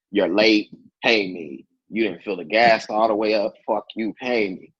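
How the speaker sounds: plain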